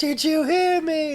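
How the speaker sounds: mock very high, very slow, drawn-out yell. Retelling a film scene where they yell up at Igor: imitating someone yelling. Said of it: "Why are you yelling?".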